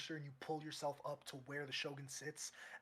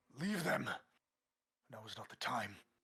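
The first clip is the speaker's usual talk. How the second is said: loud, commanding, barked delivery; 3 semitones lower, 6 dB louder than usual. Voicing the Shogun ordering a guard to drop them: barking an order. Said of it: "as the Shogun barks".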